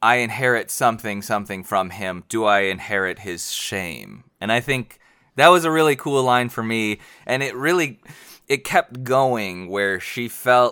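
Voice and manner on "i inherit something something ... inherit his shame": ordinary delivery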